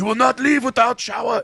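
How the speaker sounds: very high, put-on German accent. Retelling what the German gym teacher said: put-on German accent. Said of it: "I just added that in my brain".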